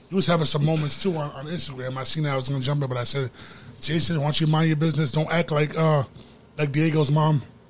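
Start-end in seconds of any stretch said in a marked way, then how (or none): none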